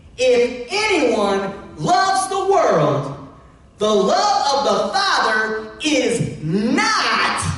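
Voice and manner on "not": heavy emphasis on the word not. Speaker reads a bible verse aloud to listeners, with stress on "not". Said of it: "emphasis on not".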